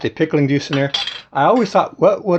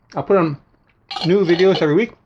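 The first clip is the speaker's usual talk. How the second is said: muffled, talking through a full mouth; 3 semitones higher than usual. Wrapping up a cooking video for viewers, talking with mouth full. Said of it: "I talk with my mouth full".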